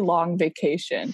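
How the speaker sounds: ordinary delivery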